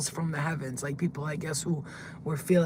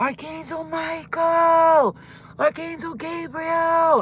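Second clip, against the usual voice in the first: play-acted very high, slow, drawn-out scream; 11 semitones higher, 6 dB louder than usual. Retelling being in hell and calling out to the archangels, retelling a scream. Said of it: "And then I screamed out".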